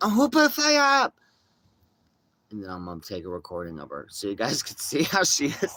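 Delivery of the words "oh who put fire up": very high, shrill flip-out squeal. Predicting how she will react to the flyers, imitating someone flipping out. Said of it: "She'll flip out".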